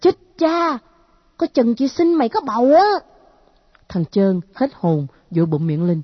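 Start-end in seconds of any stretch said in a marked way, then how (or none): 0.0-2.8 sudden, high, blurted cry of alarm. Hearing a warning about pregnancy, a girl cries out. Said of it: "Con nhỏ la lên".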